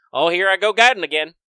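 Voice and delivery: very loud, booming, high-pitched cartoon character voice. Voicing the bug guide as a joke: Krombopulos Michael voice. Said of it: "Crumbopulous Michael from Rick and Morty".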